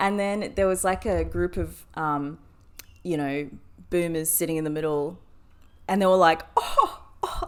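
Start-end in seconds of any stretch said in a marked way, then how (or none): 6.5-7.5 high, breathless, scornful scoffing. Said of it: "scoffing about me".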